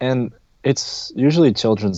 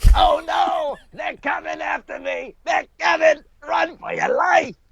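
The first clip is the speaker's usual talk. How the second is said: very high, gritty villainous voice; 3 dB quieter than usual. Showing a roach voice from a pest control commercial: gritty villainous roach voice. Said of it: "a gritty kind of, uh, villainous kind of tone".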